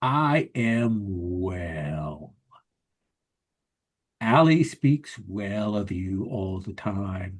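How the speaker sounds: deep bass hyena creature voice. Voicing a creature that greets Aldo: deep bass hyena voice. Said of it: "that sort of hyena with a deep bass voice".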